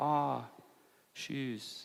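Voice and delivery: very soft, barely-there, passive, non-confrontational. Speaker showing how he'd react if a guest walked in wearing shoes: very passive. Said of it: "If I was being very passive".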